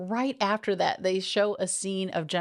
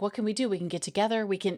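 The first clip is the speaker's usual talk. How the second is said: put-on excited, fast, hyper babbling rush. Retelling a movie character's babble after a first meeting: imitating someone hyper excited. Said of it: "she is, like, hyper excited".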